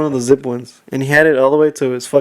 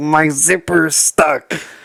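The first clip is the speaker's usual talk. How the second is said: acted strained, grunting, struggling speech; 2 semitones higher than usual. Retelling what a guy said during the incident, imitating someone struggling to speak. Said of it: "like he was struggling to say".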